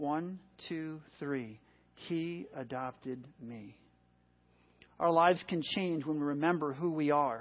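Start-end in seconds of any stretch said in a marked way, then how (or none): 2.1-3.8 hushed half-whisper, very quiet, barely there. Leading an audience on a count of three, the speaker says it: half-whispering. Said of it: "But I want you to whisper".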